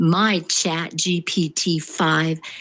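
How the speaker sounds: ordinary delivery, nothing marked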